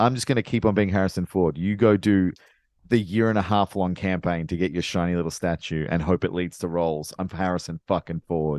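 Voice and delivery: plain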